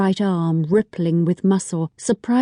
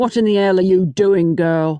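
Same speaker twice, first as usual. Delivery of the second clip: coarse, rough, gruff voice; 3 dB louder than usual. A father grabs his daughter by the shoulder and demands an answer; rough voice. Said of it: "a rough voice said".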